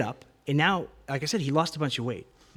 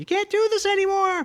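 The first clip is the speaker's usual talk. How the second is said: very high, loud scream. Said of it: "My mom's screaming".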